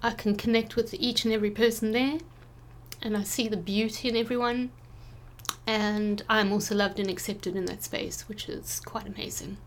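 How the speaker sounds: soft, emotional, teary voice on the edge of tears. Describing being with family to a listener, tearing up. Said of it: "you can hear, I'm already like tearing up".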